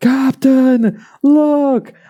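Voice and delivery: put-on very high, young deckhand-style cry. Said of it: "the guy goes like".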